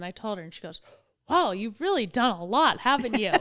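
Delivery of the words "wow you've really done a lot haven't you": loud, swooping, play-acted sarcastic faux-impressed praise. Retelling what a woman said after asking the speaker's age: imitating a facetious remark. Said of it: "she was being totally facetious".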